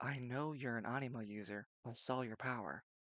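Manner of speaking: whispering. Narrating a character who steps in and speaks to the player, whispering. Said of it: "he steps in and whispers".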